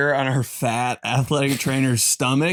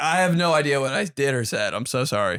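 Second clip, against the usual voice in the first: ordinary talk, nothing marked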